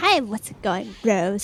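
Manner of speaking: raspy, rasping voice. Showing how a famous YouTuber sounded in the beginning: PewDiePie voice. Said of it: "That's his voice in the beginning".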